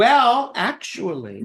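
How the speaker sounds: cartoonish character voice. Saying well actually to another speaker, sounding like the Grinch. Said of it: "you sound like the Grinch".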